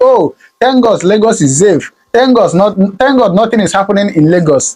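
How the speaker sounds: ordinary talk, nothing marked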